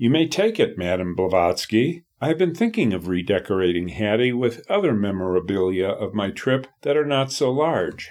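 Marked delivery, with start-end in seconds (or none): none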